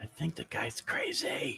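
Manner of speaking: very slow, hushed, whispered aside. Whispering in character to Jakar about a suspicious stranger: whispering. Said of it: "I'm whispering to Jakar".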